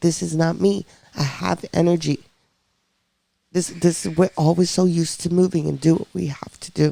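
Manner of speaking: weeping, crying through every word, tearful. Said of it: "I'm weeping because I'm like".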